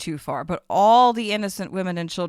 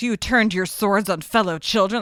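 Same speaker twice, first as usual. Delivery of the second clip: mock pissed-off angry voice, higher pitch; 3 semitones higher than usual. Acting out a character's reaction to his allies: imitating an angry character. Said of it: "he is so pissed off at first".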